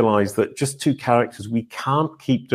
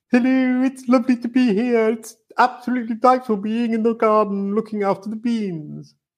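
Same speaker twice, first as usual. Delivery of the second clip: very high, pitched way up character voice; 12 semitones higher than usual. Asked to do it now, performing as Daddy Koala in the Daddy Koala voice. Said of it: "do it now".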